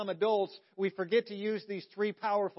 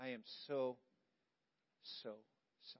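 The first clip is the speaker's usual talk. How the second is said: very quiet, low, hushed, sincere and heartfelt voice; 8 semitones lower, 15 dB quieter than usual. Showing how a real apology should be said, look them in the eye: sincere apology. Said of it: "you got to mean it".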